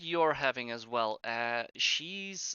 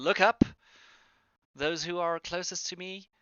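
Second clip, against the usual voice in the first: big, loud, shouted call; 4 semitones higher, 4 dB louder than usual. Voicing a character calling to those nearest her: yelling out. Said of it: "she does yell out".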